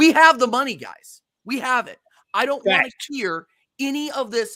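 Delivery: angry, heated outburst, voice very high-pitched. Ranting to co-hosts about the club's transfer dealings: getting angry. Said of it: "sorry, guys, I'm getting angry".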